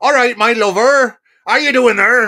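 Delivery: very high, very loud, broad rural Bristol accent. Speaker who loves the accent demonstrates a Bristolian accent. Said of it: "the Bristolian accent".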